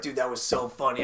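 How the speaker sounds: ordinary delivery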